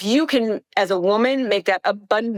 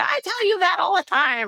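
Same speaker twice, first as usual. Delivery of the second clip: very high, squeaky put-on caricature voice; 10 semitones higher than usual. Quoting the things Sean says, imitating Sean's voice. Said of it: "definitely in that voice".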